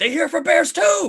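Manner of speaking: shrill, high, full-volume shout. Voicing a fairy leader who calls to his counterparts: yelling out. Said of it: "he yells out".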